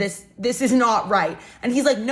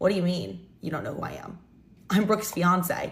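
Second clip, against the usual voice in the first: confused tone, lower and quieter; 3 semitones lower, 4 dB quieter than usual. Retelling how a stranger answered when asked who he was: imitating a confused reply. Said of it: "he looks at me so confused".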